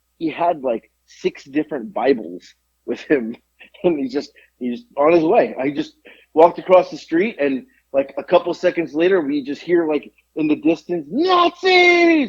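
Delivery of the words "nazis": very high, distant, shrill yell. Retelling a man with Bibles screaming in the distance: imitating a distant scream. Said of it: "Like that's what he was screaming".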